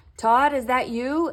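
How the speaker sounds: small, shaky, trembling, wobbling voice. Narrator reading a story; a voice in the dark asks for todd, shaky little voice. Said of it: "A shaky little voice asked".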